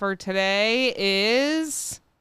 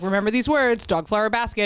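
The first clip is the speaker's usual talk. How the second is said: ordinary talk, nothing marked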